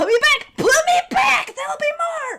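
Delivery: piercing, shrill, very high, very loud scream. Voicing a scarecrow as crows attack the players: Scarecrow screaming. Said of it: "the Scarecrow is screaming".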